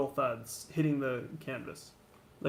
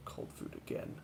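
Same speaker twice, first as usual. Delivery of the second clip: very quiet, hushed, whispered mutter. A game master voicing a companion setting up a fire, whispering to himself. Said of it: "he whispers to himself".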